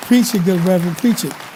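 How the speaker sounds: loud, fervent, encouraging call-out.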